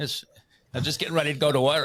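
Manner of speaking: bad put-on Australian accent. Introducing guests from Perth, Australia, a host jokes in a terrible Australian accent. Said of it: "a terrible accent".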